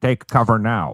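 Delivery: synthetic, robotic, computerized automated announcement voice. Showing how the warning sounds, in a robotic computerized voice. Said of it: "It's computerized, and it sounds like this".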